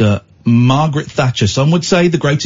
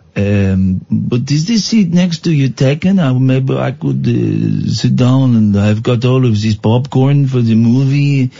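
put-on, fake French accent. Pretending to ask a stranger about a seat: put-on French accent. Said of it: "c'est quoi cet accent-là?".

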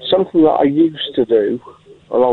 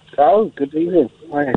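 surprised, caught-off-guard, taken-aback tone; 4 semitones higher than usual. Answering a greeting on a phone-in call: surprised. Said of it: "You sound surprised".

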